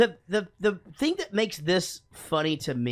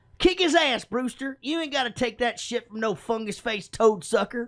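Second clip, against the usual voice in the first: put-on high, pitched-up kid voice; 5 semitones higher than usual. Comparing two movies by doing a line from each: Six Pack kid impression. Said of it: "Now I'm gonna go, uh, Six Pack".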